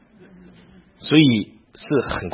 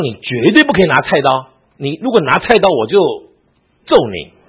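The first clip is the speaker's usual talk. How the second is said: louder, stern voice. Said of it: "她严严的警告我".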